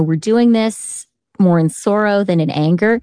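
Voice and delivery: ordinary talk, nothing marked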